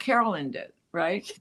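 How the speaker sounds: ordinary talk, nothing marked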